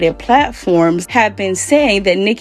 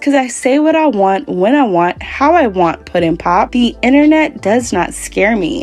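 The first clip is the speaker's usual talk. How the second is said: plain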